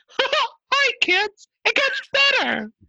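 squeaked out, very high pitch. Speaker on a podcast attempting an impression they practiced, Mickey Mouse voice. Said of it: "I was trying to do Mickey Mouse".

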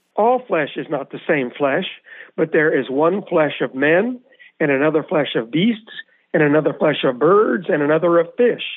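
ordinary talk

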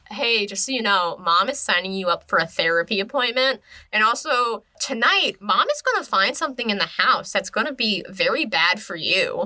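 ordinary talk, nothing marked

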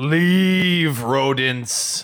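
towering bellow. Standing on the cart, towering over them, Mak calls out: bellowing. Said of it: "just basically bellows".

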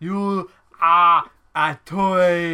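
very loud, booming, very slow, drawn-out, word by word. Playing the game of Arnold in another film: Arnold Schwarzenegger voice. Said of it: "Imagine Arnold in another film and you said".

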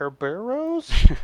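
Kerberos said with rising, question-like pitch. Explaining how to say a manga-based title: question-like rise on Kerberos. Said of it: "You gotta ask it. You don't say it".

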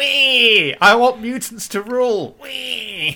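put-on very high, slow baby voice with long squeal. Imagining a baby version of the villain, baby Magneto voice. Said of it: "him in his little helmet and a cape".

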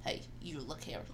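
calm, quiet, low, soft voice.

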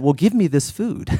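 put-on, dry, sarcastic retort. Retelling a woman's joking reply to him, the speaker acts it out sarcastically. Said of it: "And she sarcastically said".

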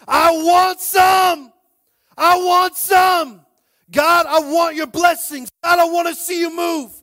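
slow, drawn-out, very loud, high shouting. Acting out people at god's feet asking for blessings: acting out people shouting. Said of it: "we are at his feet shouting".

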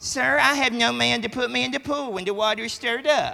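high, self-pitying poor-me tone. Reading the verse the way a preacher suggested, mock self-pitying, poor me. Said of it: "I think that should be read this way. ... Like, man, poor me".

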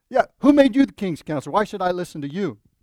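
mock sarcastic smart-aleck tone. Retelling how the king answered the prophet: imitating a smart-aleck retort. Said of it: "in a smart aleck way".

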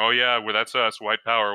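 acted-out mock-sarcastic tone. Quoting a man whose post Trump retweeted; mock-sarcastic quote.

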